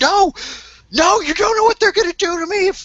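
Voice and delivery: very high, shrill, screaming cry. A narrator voices a woman tackled by the player, screaming. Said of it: "she's she's she's screaming".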